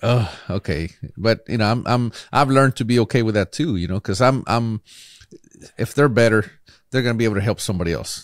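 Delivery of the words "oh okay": acted bittersweet feeling. Retelling own reaction when others win with their advice: imitating own bittersweet reaction. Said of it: "there's also that bittersweet moment where".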